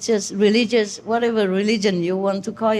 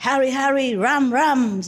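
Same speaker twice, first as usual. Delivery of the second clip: mock-authoritative, powerful, put-on delivery; 3 semitones higher than usual. Showing how a woman says it more authoritatively than them: imitating an authoritative way of saying it. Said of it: "It's more powerful than what I'm saying normally. Say, ... see, like that".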